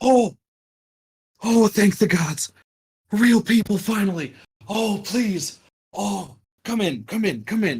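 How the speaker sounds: overjoyed, elated, very high-pitched. Storyteller voicing an old man greeting the players, elated. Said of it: "elated large smile".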